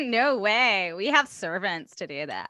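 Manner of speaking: put-on California accent, put on and played up. Two people riff on a rhyme; one answers in a California voice. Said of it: "Sounds like that's a California voice right there".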